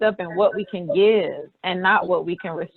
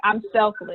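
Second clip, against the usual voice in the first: put-on proud, boastful girl voice; 2 semitones higher than usual. Retelling what a young girl said at a workshop: imitating a proud girl, like a badge of honor. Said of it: "a badge of honor".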